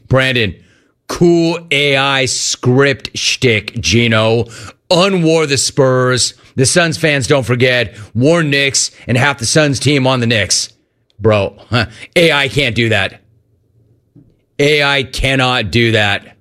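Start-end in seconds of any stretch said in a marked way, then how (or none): none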